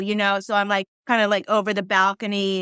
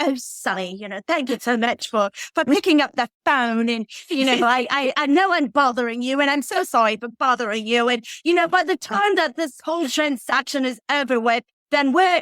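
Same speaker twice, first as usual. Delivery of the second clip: put-on British accent; 4 semitones higher than usual. Retelling what a man said on a Sunday night phone call, in his British accent. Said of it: "he says with his British accent".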